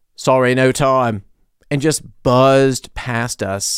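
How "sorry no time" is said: put-on brisk, kind of British accent. Speaker retelling a man in Berlin rushing past them, kind of British accent. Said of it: "in like kind of a British accent".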